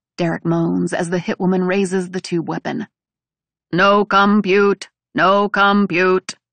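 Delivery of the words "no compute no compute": loud, slow, robotic, machine-like voice. Artie speaks as the hitwoman raises her weapon, in a mechanical voice. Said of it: "Artie says in a mechanical voice".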